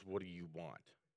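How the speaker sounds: low, quiet, scowling, grumpy grumble.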